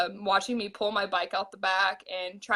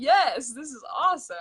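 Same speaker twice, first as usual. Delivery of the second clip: mock stoked, thrilled, pitched-up excited cheer; 5 semitones higher than usual. Retelling watching a sister lead the race: imitating own stoked reaction. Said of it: "I was more stoked on that".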